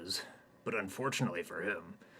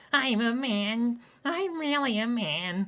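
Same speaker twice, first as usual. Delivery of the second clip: raised, even higher pitch; 9 dB louder than usual. Narrator voices Hayden, tied up and laughed at by a crowd, even higher voice. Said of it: "proclaims in his even higher voice".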